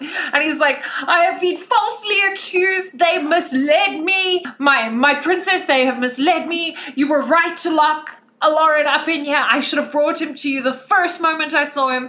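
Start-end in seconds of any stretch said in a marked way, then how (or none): 1.1-12.1 loud, carrying, high-pitched shout. Voicing Bob as he speaks to his princess, Bob shouting. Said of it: "Bob is going to shout".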